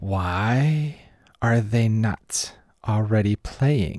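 hissed, with the why drawn out long. Bib stops his work and looks up from his data pad; Bib hissing. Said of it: "he kind of hisses".

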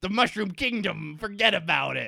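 put-on loud, gruff Brooklyn accent, laid on thick. Discussing how Mario talked in an old show, in a gruff Brooklyn accent. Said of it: "talks with like a gruff Brooklyn accent".

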